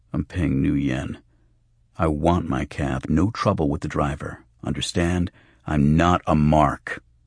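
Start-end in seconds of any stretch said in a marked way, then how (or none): none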